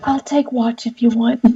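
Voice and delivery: soft, hushed half-whisper. During a role-play at camp, a character speaks to a companion, half-whispering. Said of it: "Ashling is gonna whisper to uh".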